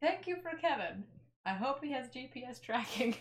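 high, loud scream in an acted voice. Playing a character thanking an unseen stranger: screaming out in character. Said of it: "I scream this out".

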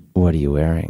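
very low, sultry, seductive voice. Acting out a mystery caller on the phone in a story: sultry voice. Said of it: "it's a very sultry voice".

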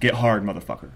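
normal talking voice

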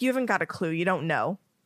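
mock snarky tone with real anger. Retelling a scene, the speaker quotes Harry answering Dumbledore: Harry, mock-angry and snarky. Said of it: "like angry snarky".

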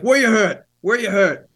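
high-pitched put-on in-character yell. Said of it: "I'm yelling as if I'm actually in the".

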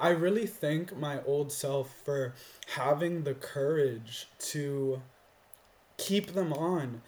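voice catching, choked up, nearly in tears. Speaking about their old self, about to cry. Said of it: "I'm about to cry now".

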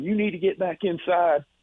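mock yelling. Quoting a security guard during an active-shooter scare; retelling a guard's yell. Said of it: "the security guard's yelling at me".

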